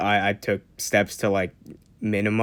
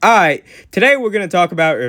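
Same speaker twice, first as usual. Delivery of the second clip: loud, high, booming projected presenter voice; 10 semitones higher, 9 dB louder than usual. Describing the voice used for short videos, demonstrating the projected shorts voice. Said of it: "get like the shorts voice down where it's like".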